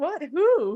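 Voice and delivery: play-acted frightened, startled, very high voice. Retelling how her mom reacted to her outburst, imitating a scared reply.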